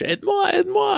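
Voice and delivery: reenacted panicked scream. Retelling panicking in the water and calling to his buddy, retelling screaming in French. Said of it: "I'm screaming in French".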